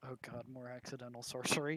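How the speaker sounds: low mutter under the breath, mumbled aside. A player speaks as his character in the game, mumbling under his breath. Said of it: "just gonna mumble under his breath".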